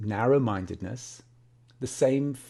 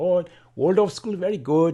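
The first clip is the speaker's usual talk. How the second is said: attempted Swiss German accent, voice raised; 6 semitones higher, 6 dB louder than usual. Quoting one of two Swiss men from a conversation, attempted Swiss German accent. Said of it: "that's my attempt at a Swiss German accent".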